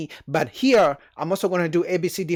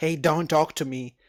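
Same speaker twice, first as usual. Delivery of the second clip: sassy brush-off with attitude; 2 semitones lower than usual. Acting out a second woman answering a greeting: imitating a woman giving attitude. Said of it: "she gives him attitude".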